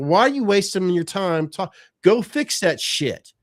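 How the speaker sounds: mock furious, angry, loud yelling. Retelling yelling at the people meant to fix the electricity, retelling an angry yell. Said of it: "I'm yelling at these motherfuckers".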